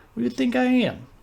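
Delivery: botched Brooklyn wise-guy accent, very high pitch. Joking that 'wise man' means wise guy, in a bad brooklyn wise-guy accent. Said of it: "I should stop doing that".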